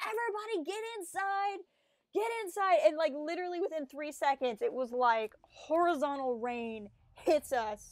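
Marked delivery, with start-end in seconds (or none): 0.0-2.8 mock, very high, urgent shrieked scream. Retelling a storm, calling to people outside to get inside, retelling a scream. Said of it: "I screamed at some people".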